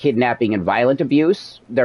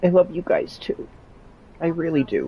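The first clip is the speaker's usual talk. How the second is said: crying while talking, tearful, higher and quieter; 6 semitones higher, 5 dB quieter than usual. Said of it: "I'm crying right now".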